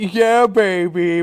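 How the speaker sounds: put-on loud, hyped, belted yell, word baby stretched out. Showing the others what Dick Vitale sounds like after they ask for it, a Dick Vitale impression. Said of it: "He's like".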